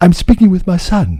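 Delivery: very high, tender, kind, gentle voice. Speaker describing an actor's scene as a father speaking to his son: imitating soft, gentle voice. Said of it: "in such a gentle way".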